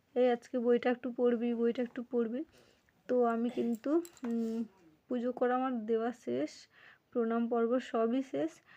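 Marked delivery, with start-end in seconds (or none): none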